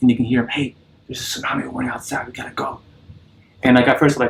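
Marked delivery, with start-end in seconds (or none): 0.5-2.8 very quiet, hushed half-whispered aside. Retelling a stranger in a cinema warning friends: imitating someone half-whispering. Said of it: "kinda whisper to someone".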